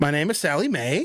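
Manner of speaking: statement rising in pitch on Mae. Acting out a statement that sounds like a question, rising pitch on Mae. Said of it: "even when they make a statement, it sounds like they're asking a question".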